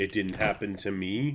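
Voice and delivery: ordinary talk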